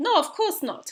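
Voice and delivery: put-on clumsy, unconvincing Bulgarian accent. Retelling a man's reply to a question, in a bad Bulgarian accent. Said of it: "Excuse my bad Bulgarian accent".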